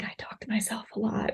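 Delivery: very soft, secretive, barely voiced whisper. Imitating people admitting they talk to themselves: imitating a whisper. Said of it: "in a whisper".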